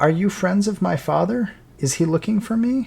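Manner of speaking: frightened, high, scared calling-out voice. Narrating to Kellic, voicing someone calling out: frightened voice calling out. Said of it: "a frightened voice call out".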